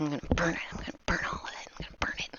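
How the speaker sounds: whispered mumbling under the breath. Voicing a small cleaning creature as it works: mumbling to herself. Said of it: "she's just gonna start mumbling to herself".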